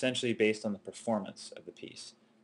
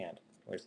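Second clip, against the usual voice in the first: plain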